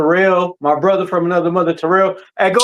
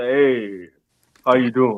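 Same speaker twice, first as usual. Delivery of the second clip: deep, low, smooth radio voice; 6 semitones lower, 4 dB quieter than usual.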